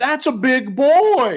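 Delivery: very high-pitched, slow, stretched-out Southern drawl. Retelling a stressful snake encounter, the speaker is imitating Jesse's southern drawl. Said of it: "it's like a real southern kind of".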